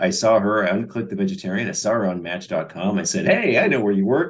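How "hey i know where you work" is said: put-on playful goofy voice, pitched up. Retelling greeting a coworker seen on a dating site: imitating own goofball line. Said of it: "Like a goofball".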